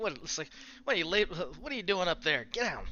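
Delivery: mocking, jeering thug voice. Voicing a crook in the audience jeering at the party: jeering crook. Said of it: "one of the crooks is just like".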